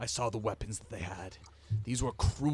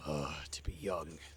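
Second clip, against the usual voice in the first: muttered, much lower; 6 semitones lower, 5 dB quieter than usual. Game narrator voicing Geralt looking back at Jess, muttering under his breath. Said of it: "mutters under his breath".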